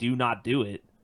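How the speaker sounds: ordinary talk, nothing marked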